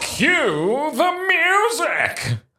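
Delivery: terrible, very high, swooping TV talent-show host voice. Podcast co-host asked to cue the music, in a terrible X Factor voice. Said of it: "a really terrible X Factor voice".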